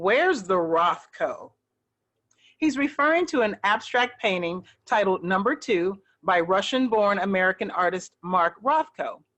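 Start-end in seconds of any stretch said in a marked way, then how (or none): 0.0-1.5 mock annoyed tone, lower and slower. Retelling what someone asked the front desk staff, retelling an annoyed question. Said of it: "in an annoyed tone".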